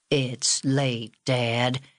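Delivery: unhurried. A son answers his father's order to tell a story, slowly. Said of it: "said August slowly".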